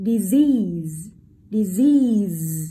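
stress on second syllable of disease. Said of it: "chúng ta rơi vào âm tiết số hai".

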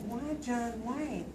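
normal talking voice

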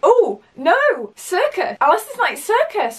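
high, loud, horrified tone.

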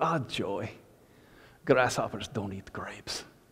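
put-on thick German accent, very soft, low and hushed. Retelling Mrs. Hagan's reply to a warning given to Mr. Hagan, strong thick German accent. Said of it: "in that strong thick German accent".

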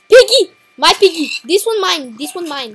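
loud put-on Mexican accent in a woman's voice. Claiming a pig while playing a game: sounding like a Mexican woman. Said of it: "I sound like a Mexican woman".

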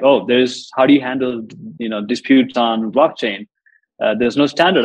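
usual speaking voice

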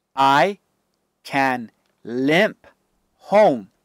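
ordinary delivery

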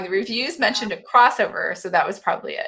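ordinary talk

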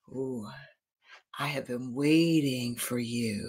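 deep, hushed creature voice. Reading a book aloud, the octopus emerges from the darkness: deep octopus voice. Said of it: "said the octopus with a deep voice".

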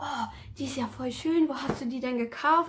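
mock-admiring, gushing exclamation. Speaker retells her grandma seeing the bag she made, retelling grandma's admiring gush. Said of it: "grandma admiring the bag".

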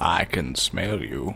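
put-on slow, soft wise narrator voice. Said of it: "you can do the Morgan Freeman impression".

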